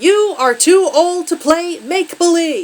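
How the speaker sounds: high, loud, slow yell, word by word. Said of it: "each rip punctuated by a yelled word".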